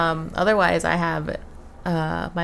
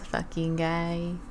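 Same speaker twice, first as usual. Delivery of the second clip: soft, put-on comedy vampire film-character voice; 6 dB quieter than usual. Retelling how everyone reacted to a guy who threw up at the bar: What We Do in the Shadows voice. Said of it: "in What We Do in the Shadows voice".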